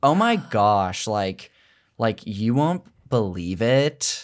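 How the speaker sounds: put-on Valley girl accent, lengthened syllables. Asked for your California accent, trying one out: Valley girl accent. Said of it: "I might do like lean Valley girl".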